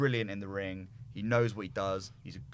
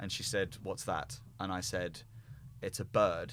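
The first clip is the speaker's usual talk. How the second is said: ordinary talk, nothing marked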